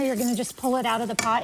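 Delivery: ordinary delivery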